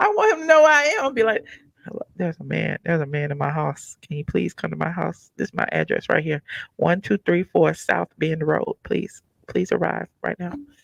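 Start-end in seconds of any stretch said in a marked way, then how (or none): 1.8-10.5 hushed, quiet whisper. Acting out hiding from a man with a gun, calling for help: pretend whispering. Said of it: "I might be whispering too".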